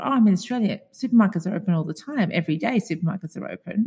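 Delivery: ordinary talk, nothing marked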